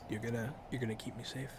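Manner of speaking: gentle and soft. A character being offered protection by knights replies, soft-spoken. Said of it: "She's very soft spoken".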